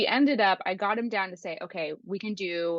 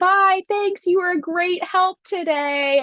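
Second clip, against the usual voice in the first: mock, very high, loud, patronizing, condescending politeness; 11 semitones higher, 7 dB louder than usual. Describing a TikTok sound of people leaving the office, mock-condescending goodbye. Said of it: "like in a condescending way".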